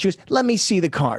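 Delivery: put-on Yiddish-inflected accent. Quoting what a woman said to the speaker, in a Yenta accent. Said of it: "in the same Yenta accent that you're giving".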